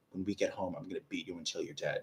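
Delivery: angry, fully half-whispered voice. Retelling how mom half-whispered a threat in church: imitating mom's angry half-whisper. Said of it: "whisper in my ear".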